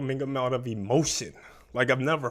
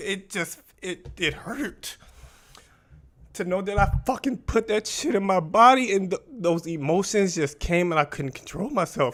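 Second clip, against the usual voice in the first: high, tearful voice breaking while crying; 6 semitones higher than usual. Recounting breaking down in a restaurant, crying, voice breaking. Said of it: "I broke down exactly how I am now".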